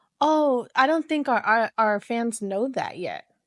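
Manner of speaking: ordinary talk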